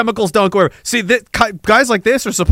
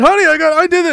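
put-on, very high-pitched, all-excited gushing voice; 10 semitones higher than usual. Acting out a man telling his honey his news, imitating someone all excited. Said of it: "He's all excited".

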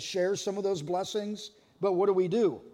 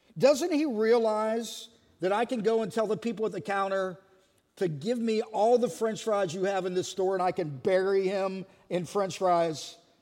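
ordinary talk, nothing marked

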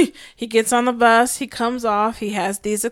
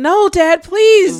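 put-on tearful, high, loud, crying, pleading voice; 9 semitones higher, 9 dB louder than usual. Retelling how the kids cried and begged their dad: imitating crying kids pleading. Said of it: "they're crying and telling him".

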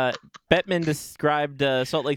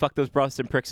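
ordinary talk, nothing marked

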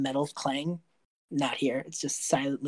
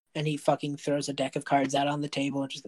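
usual speaking voice

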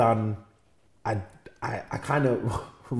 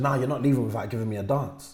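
ordinary delivery

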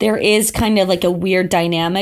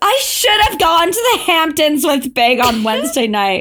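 full dramatic wailing. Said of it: "full drama".

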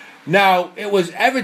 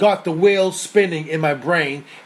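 ordinary talk

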